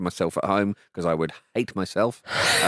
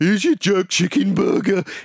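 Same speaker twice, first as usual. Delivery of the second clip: bad put-on Birmingham (Brummie) accent, very high voice; 11 semitones higher, 5 dB louder than usual. Retelling how a barman addressed his friend; faux birmingham accent. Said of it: "in a sort of faux Birmingham voice".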